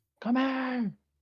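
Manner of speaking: shouting. Playing a character calling a crewmate down a corridor: yelling down a corridor. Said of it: "I yell at the corridor".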